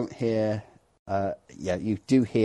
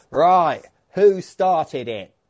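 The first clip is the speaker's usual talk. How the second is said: booming, loud, high bellow; 8 semitones higher, 8 dB louder than usual. A storyteller voices the chief after a brawl is put down, bellowing across the bar. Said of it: "the chief was just bellows across the bar".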